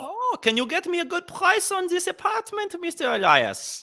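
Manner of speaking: high, botched fake German accent. Acting out someone asking the real estate agent for a good price, terrible fake accent. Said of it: "That's the worst Indian accent".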